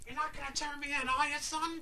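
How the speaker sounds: poor impression voice. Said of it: "just did the worst impression I've ever heard".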